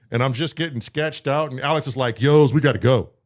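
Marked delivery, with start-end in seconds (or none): 2.2-3.0 mock dead-serious tone, raised voice. Retelling what Alex said while leaving the shop, imitating Alex saying it seriously. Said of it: "And he said it serious".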